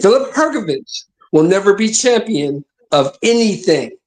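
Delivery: slow, deliberate, spelled out word by word. Repeating a prediction so the listeners can understand it, said slower. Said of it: "say it a little bit slower".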